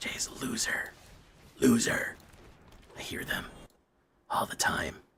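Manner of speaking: slow, drawn-out, taunting mocking whisper. Telling the guys he hears them mocking him behind his back: imitating a mocking whisper. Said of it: "The terrible whispers".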